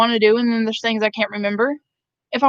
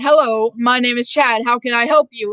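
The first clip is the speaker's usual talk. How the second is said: put-on proper, city-sounding voice. Retelling straightening up for the teacher, imitating own city voice. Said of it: "I have to talk with my city voice".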